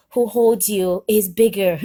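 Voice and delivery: ordinary talk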